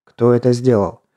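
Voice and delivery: plain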